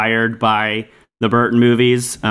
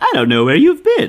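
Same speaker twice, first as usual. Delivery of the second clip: mock light, high, amused, laughing throwaway tone; 7 semitones higher than usual. Retelling a movie scene where a character laughs off a threat: imitating laughing it off. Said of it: "laughs it off".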